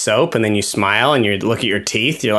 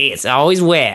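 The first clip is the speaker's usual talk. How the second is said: put-on Southern accent, higher pitch; 3 semitones higher than usual. Retelling how a caving film's narrator spoke: imitating a southern accent. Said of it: "this woman with a southern accent narrated".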